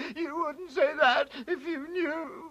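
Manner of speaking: high, tearful speech broken by crying. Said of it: "Why are you crying?".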